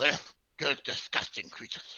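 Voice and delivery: breathy, half-whispered big-guy character voice. Voicing a big fat guy floating up in an armchair: voicing a big fat guy. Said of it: "this big fat guy walks up to you".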